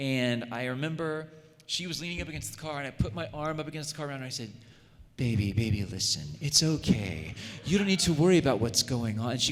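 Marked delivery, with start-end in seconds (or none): 5.2-9.3 raised on-air radio host announcer voice. Retelling what the speaker said to the girl they were dating during a tiff: radio host voice. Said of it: "bishy uh, radio host voice".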